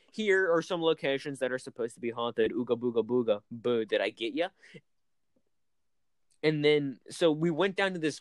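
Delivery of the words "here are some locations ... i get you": ordinary talk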